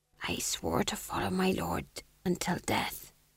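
raspy, hoarse, breathy near-whisper. The fool answers the duke's question about his loyalty, in a hoarse voice. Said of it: "said the fool hoarsely".

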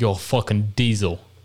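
Australian accent impression. Recalling a movie they watched, the speaker quotes a character: australian accent impression.

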